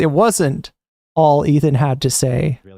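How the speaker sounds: slow, deliberate, documentary-style narrator voice. Commenting on a clip with a mock aside: put-on narrator voice. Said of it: "narrator voice".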